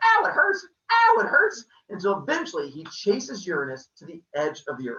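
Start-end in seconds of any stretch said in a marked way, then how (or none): 0.0-1.6 very high, loud, wailing cries of pain. Retelling a myth while acting out Uranus being hacked: voicing Uranus crying out in pain. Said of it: "And Uranus keeps, he's like".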